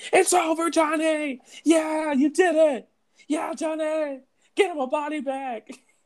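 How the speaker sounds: very high, frenzied, drawn-out screaming. Retelling a fight where Johnny hurts Daniel, as his friend cheers; imitating friend screaming. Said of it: "his friend starts screaming".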